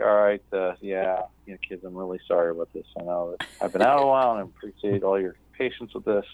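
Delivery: put-on somber announcing tone. Retelling addressing a first class after an absence: imitating own somber announcement. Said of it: "I was super somber".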